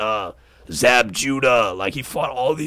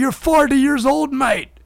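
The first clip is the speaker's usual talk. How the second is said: very high, mocking, taunting voice; 4 dB louder than usual. Retelling a fighter mocking Mayweather: Conor McGregor impression. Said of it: "he's like, he's like".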